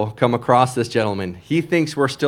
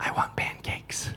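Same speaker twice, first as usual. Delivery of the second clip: very soft, breathy, barely voiced whisper. Retelling what a daughter said after climbing onto a lap: imitating a whisper. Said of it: "and she whispers".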